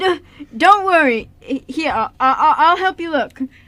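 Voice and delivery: awkward stammering speech. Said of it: "Sure, Liam was awkward, but".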